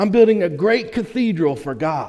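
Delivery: thrilled, proud, eager and excited tone. Telling a parable about three wall builders, voicing the third: retelling excited speech. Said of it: "he was all excited about what he was doing".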